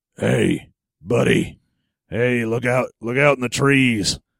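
put-on voice, as deep as it goes. Retelling what the voice in the movie says: imitating a voice as deep as possible. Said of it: "being as deep as he can".

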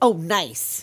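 put-on annoyed voice. Retelling a character's reaction to his things burning down, mock-annoyed. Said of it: "Just like annoyed".

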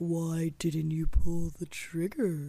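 low, slow, possessed demonic voice. Retelling a line from a show: imitating an Exorcist-like demonic voice. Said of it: "It was a lot like The Exorcist".

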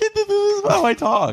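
put-on very high, slow, dopey, dumb childish voice. Retelling own reaction to hearing accents, acting like a dumb kid. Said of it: "I just become a, like, a dumb kid".

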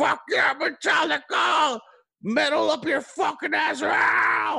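put-on very high, raspy, rowdy drunken hollering scream. Retelling a drunk man in the waiting crowd at a Metallica show: imitating a concertgoer screaming. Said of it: "he kept screaming like".

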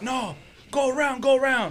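put-on yelling, pitched high and drawn out. Retelling how a security guard turned a car away: imitating a guard yelling. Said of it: "you don't have to yell at me like that".

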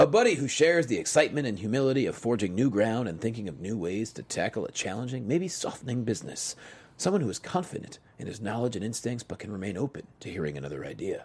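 soft, low, somber voice. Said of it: "I'm gonna say it in a very, um, somber tone".

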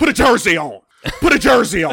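dismissive, brushing-off tone, said twice. Mocking a head coach who dismisses critics: imitating Rivera's dismissive attitude. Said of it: "His mentality would always".

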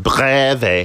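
odd Italian/German accent on 'breve'. Saying the word breve: weird Italian-German accent on 'breve'. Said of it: "I said breve in a weird Italian / German accent".

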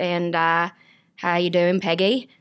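New Zealand accent. Asked to do new zealand, trying out a new zealand accent. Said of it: "Just like a Kiwi talking like this".

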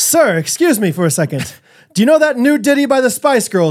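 mock old-fashioned English voice. Joking about requesting songs at a wedding reception, mock old-fashioned English. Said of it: "Like old English a little bit".

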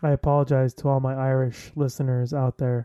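normal talking voice

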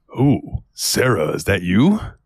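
put-on old game character voice, animated, pitch swooping. Recalling a PlayStation shooter where Duke answers a ringing payphone, Duke voice. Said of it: "And Duke goes".

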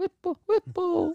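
very high murmur, under the breath. Recalling walking the floor, saying a word near people to see who turns: retelling saying it under breath. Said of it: "I would just go like under my breath".

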